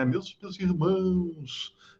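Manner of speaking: soft, fake pious priest voice, "irmãos" drawn out. Criticizing preachers who change their voice to preach, imitating pious priest voice. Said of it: "faz voz de padre".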